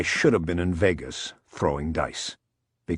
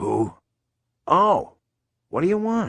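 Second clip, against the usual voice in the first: groggy, half-awake, sleepy, very high; 13 semitones higher, 4 dB louder than usual. Narrator reads Buddy, woken by a late phone call, answering: groggy voice. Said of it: "he answered in a groggy voice".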